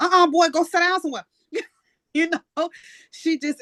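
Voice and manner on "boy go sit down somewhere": high-pitched grandmotherly scolding voice. Retelling how she bossed her little brothers around, imitating a scolding grandma. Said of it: "She sounded just like her grandma".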